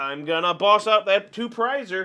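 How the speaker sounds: ordinary delivery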